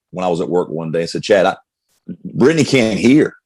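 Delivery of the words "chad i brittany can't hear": normal talking voice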